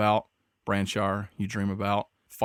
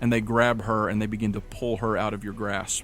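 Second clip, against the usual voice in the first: normal talking voice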